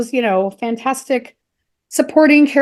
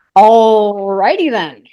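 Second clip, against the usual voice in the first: belted out, stretching out the word "all"; 2 semitones lower, 5 dB louder than usual. Saying a catchphrase in a self-admitted bad impression: Jim Carrey impersonation. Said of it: "That's my best Jim Carrey impersonation".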